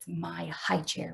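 hushed, very quiet half-whisper under the breath. A boy's father asks him to help paint his sister's high chair; half-whispering. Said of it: "whispered [name]".

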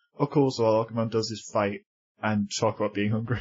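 plain

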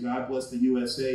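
ordinary talk, nothing marked

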